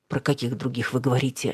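plain reading voice

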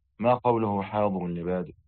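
plain

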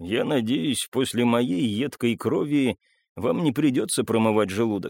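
ordinary delivery

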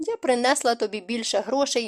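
ordinary delivery

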